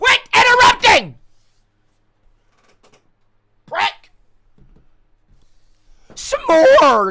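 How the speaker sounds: shrill, very loud, very slow, drawn-out furious yelling. Speaker yelling at someone who keeps interrupting, yelling angrily. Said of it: "I apologize for yelling".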